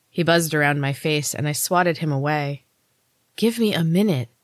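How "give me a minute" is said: breathless, gasping for breath. Narrator, urged by Neil to get up, answers him, gasped. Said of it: "I gasped".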